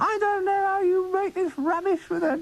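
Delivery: put-on very high, shrill, shouting old woman voice. Recalling a tea lady who attacked the cast in the studio, retelling a pepper pot shout. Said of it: "shouting at us almost in a pepper pot voice".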